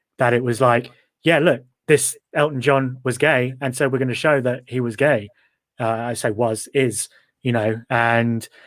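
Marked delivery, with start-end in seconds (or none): none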